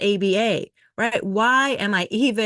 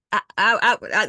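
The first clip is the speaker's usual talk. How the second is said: put-on dumbfounded, speechless stammering. Retelling being told hours didn't count: imitating dumbfounded stammering. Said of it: "Jenny was dumbfounded".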